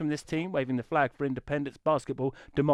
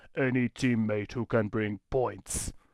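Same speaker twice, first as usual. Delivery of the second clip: put-on Austrian accent; 4 semitones lower than usual. Quoting a teammate request in the league: Arnold Schwarzenegger voice. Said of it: "in my best Arnold Arnie Arnold Schwarzenegger voice".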